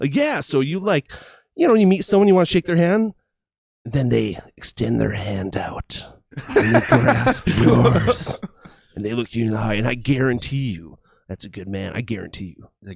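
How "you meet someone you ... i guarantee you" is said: smoldering, sultry, emotional, heartfelt sincerity. Speaker imitating a man from a streaming show, imitating a deep, sultry voice. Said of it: "deep, sultry voice".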